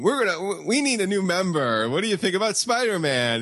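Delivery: pompous put-on superhero voice. Retelling how the Avengers discuss a new member: pompous Avengers voice. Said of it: "all of their pompousness and, you know, self-congratulatory".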